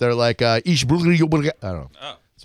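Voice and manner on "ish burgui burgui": bad fake Brazilian Portuguese accent, gibberish, higher, slower. Imitating how Brazilians talk, in a horrible Brazilian Portuguese impression. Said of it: "Horrible impression".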